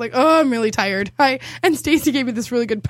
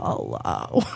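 put-on sick voice, lower and quieter; 7 dB quieter than usual. Answering a friend's phone call while really sick, mock-sad Elmer Fudd voice. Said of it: "that sad Elmer Fudd voice that happens when you're really sick".

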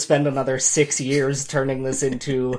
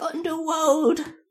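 put-on very high, squeaky, tiny baby voice. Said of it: "a little baby voice going".

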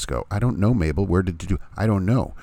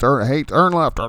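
mock-irritated navigation device voice; 6 semitones higher, 3 dB louder than usual. Retelling how he gave driving directions, imitating an aggravated GPS. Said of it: "He's like an aggravated GPS voice".

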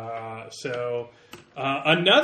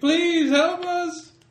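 desperate, very high, loud scream; 5 dB louder than usual. Voicing a man hanging from a tree, calling out: screaming for help. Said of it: "just him screaming".

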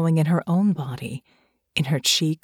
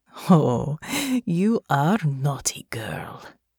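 slow, lingering, purring delivery. Natasha nuzzles the side of Honor's neck and speaks to her, purring. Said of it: "Natasha purred".

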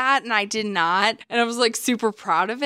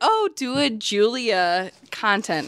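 plain

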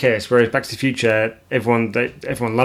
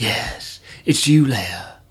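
put-on creepy, very slow delivery. Retelling a film scene, acting out a line: imitating a creepy way of speaking. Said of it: "He says it in a kinda creepy way".

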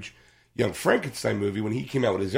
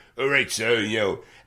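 put-on Cockney accent. Imitating the manservant Jacques from a film: Cockney accent imitating Jacques. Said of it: "he's like the Cockney".

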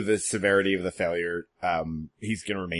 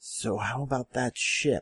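croaky, hoarse whisper, pitched up; 5 semitones higher than usual. Narrating to the players, a familiar voice speaks from behind them: Henrik's croakish whisper. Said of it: "croakish whisper from behind you".

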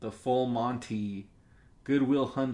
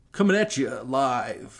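radio DJ voice, louder; 6 dB louder than usual. Back from a break, a podcast host announces the return in a radio dj voice. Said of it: "Don't use that voice".

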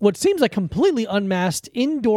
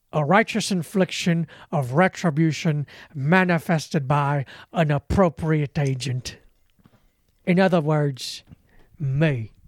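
put-on low, deep old-gangster crime boss voice; 4 semitones lower than usual. The speaker performs the monologue from Snatch for the others: Bricktop monologue impression. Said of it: "I'll do the monologue from Snatch".

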